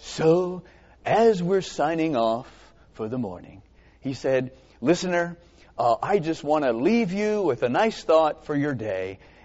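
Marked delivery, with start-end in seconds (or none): 4.8-9.2 put-on consoling radio-host voice. Recalling a radio host signing off, imitating Phil Johnson's consoling voice. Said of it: "he had that real consoling voice".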